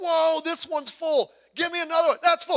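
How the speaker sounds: very high-pitched, loud, thrilled, excited exclaiming. Acting out a woman watching the oil pour: imitating someone excited. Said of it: "she's getting excited".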